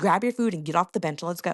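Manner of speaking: ordinary talk, nothing marked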